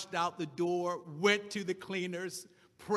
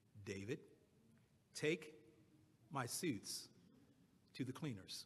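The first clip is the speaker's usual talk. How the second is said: hushed, calm, halting whisper, very slow, word by word; 7 semitones lower, 15 dB quieter than usual. The speaker retells what a man said, looking right in his eyes: calm, very slow. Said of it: "said very slowly and effectively".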